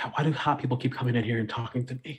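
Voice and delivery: muttered under breath. Voicing a red-faced character as the visitor leaves: muttered under her breath. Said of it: "just ever under her breath".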